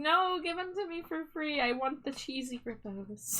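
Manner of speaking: acted-out, desperate, practically begging tone. Asking to be given the cheesy grippos for free, desperate. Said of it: "The desperation in my voice".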